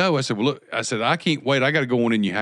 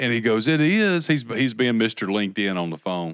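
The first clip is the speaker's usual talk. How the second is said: ordinary delivery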